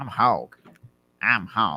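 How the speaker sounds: deliberate, very slow, drawn-out delivery. Introducing oneself as another speaker, imitating Hog. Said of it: "What was that impression of me?".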